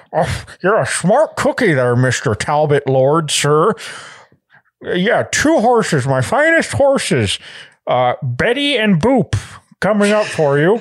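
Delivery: wheedling, fawning, croaky frog-like voice, chatty patter. A goblin cart dealer sells horses to a lord: goblin voice becoming Kermit. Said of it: "it's a it's a goblin named [name]. / [name] needs to sell carts for his many, / [name]'s carts. / It's slowly becoming [name]. Like a very bad r- [name]".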